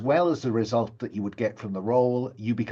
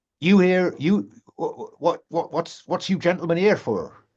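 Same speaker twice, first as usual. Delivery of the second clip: terrible fake countryside accent, pitched up; 6 semitones higher, 5 dB louder than usual. Voicing the pony and trap driver addressing the gentlemen, terrible fake countryside accent. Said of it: "doing a terrible cod countryside accent".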